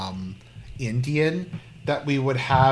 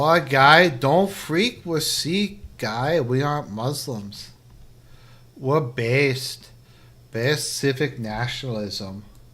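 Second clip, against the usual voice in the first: casual, put-on general Toronto accent. While waiting for results, the speaker slips into a general Toronto accent. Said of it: "it's just the general Toronto accent now".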